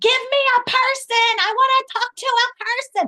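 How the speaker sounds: very high-pitched yelling. Retelling calling the bank and getting automation: imitating yelling at a phone. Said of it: "yelling at the phone".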